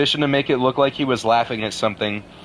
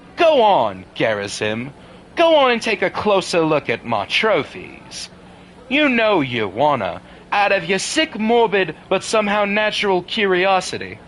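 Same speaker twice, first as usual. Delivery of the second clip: animated put-on East Coast accent, swooping pitch; 6 semitones higher than usual. Speaker addresses another person while doing a Liquid Snake impression. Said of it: "doing the liquid snake impression has me doing a better East Coast accent".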